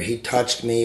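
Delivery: ordinary delivery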